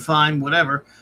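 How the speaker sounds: ordinary talk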